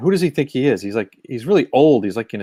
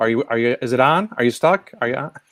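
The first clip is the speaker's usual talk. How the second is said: put-on awkward tone. Showing how a caller reacts to a frozen screen: imitating someone asking awkwardly. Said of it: "while they awkwardly try to go".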